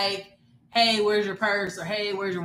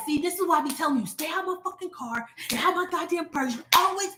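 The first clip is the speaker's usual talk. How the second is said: high-pitched, furious tirade full of cussing; 8 semitones higher than usual. Retelling going off at someone who went in her car: imitating herself going off. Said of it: "and I am going off".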